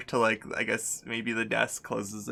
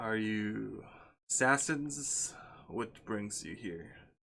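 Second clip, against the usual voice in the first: put-on very soft, very quiet, crackly old man voice; 10 dB quieter than usual. A smiling figure questions the two of them; crackly old man voice. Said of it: "his voice is kind of like crackly and old manish".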